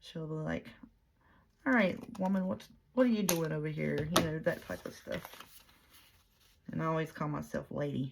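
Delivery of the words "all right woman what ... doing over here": breezy, put-on English accent. Speaker quoting a woman she enjoys watching, imitating an English accent. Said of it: "I'll catch myself talking in an English accent".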